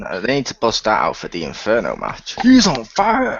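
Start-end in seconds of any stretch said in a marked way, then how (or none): 2.4-3.4 high, loud arcade announcer yell. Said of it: "the N B A G M dude".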